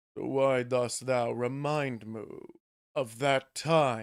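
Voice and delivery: low, soft, hushed, seductive voice. Voicing the character Emu on their turn in a game; sexy Emu voice. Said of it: "let me get the sexy Emu voice".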